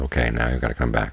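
ordinary delivery

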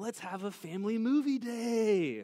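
put-on high, loud, eager, excited little girl voice.

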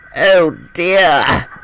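pained, wincing delivery. Narrator reads an engine right after a collision, wincing. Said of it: "he winced".

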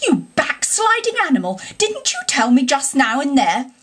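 shocked, outraged, high swooping scandalised cry. One animal rebukes another for taking back his repentance: scandalised cry. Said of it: "cried the badger, greatly scandalised".

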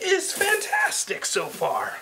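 high voice, cracking and breaking very high. Going through boxes of items, the speaker's voice cracks mid-sentence. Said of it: "My voice just cracked".

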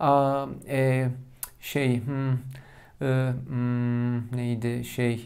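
halting ums and ers with long pauses.

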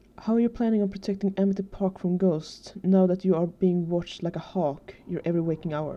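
ordinary delivery, nothing marked

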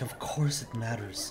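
hushed, quiet mutter under the breath. Retelling how a man answered about Cole's life, retelling a mutter under breath. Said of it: "Under his breath".

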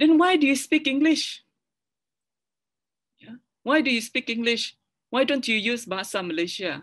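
high, loud, sharp scolding. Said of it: "scolded me and said".

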